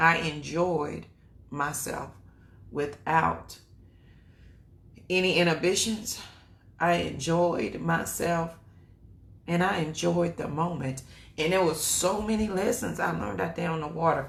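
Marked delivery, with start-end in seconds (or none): 6.8-14.3 fighting off crying mid-sentence, holding back tears, pushing through. Speaker recalling lessons learned out on the water, holding back tears. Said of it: "I'm trying not to cry".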